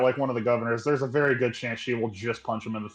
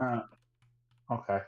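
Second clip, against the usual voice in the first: quiet, beaten-down, defeated voice; 7 dB quieter than usual. After being told no more questions are allowed, answering defeated. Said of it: "You sounded so defeated".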